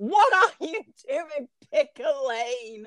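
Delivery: play-acted exasperated yell, held back, frustrated. Retelling how you yelled at your TV, retelling screaming at the TV. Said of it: "I'm like screaming at my TV going".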